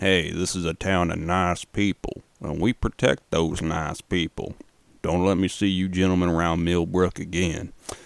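put-on sheriff accent. Recapping a film, the town sheriff warns Carl Fogarty's group, put-on accent for Sheriff Sam. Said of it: "why am I doing that fucking accent".

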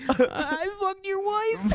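mock very high, slow, broken by giggles. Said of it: "that guy just turns into Jimmy Fallon from S N L".

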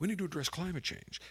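very quiet, hushed, soft voice. Mocking the Democrats' talking points with a Biden voice. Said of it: "let me do a Biden voice".

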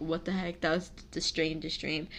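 ordinary talk

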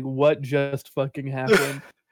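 normal talking voice

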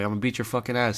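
put-on, loud, forceful, threatening tone. Retelling a classmate's threat in class: imitating someone saying it loud. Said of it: "he said that shit loud".

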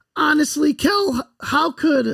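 voice cracking and breaking on the words. Recounting that the football team captain skipped practice, the speaker's voice cracks. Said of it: "my voice just cracked".

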